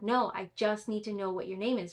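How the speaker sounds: ordinary talk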